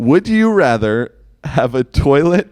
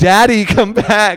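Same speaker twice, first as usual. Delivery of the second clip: mock screaming, high, pleading cry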